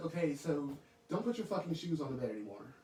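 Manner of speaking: ordinary talk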